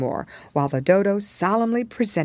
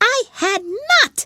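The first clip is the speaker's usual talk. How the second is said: shrill, very high, sharp, furious angry outburst; 5 dB louder than usual. Reading a story aloud, the Mouse answering Alice: sharp, angry cry. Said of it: "cried the Mouse sharply and very angrily".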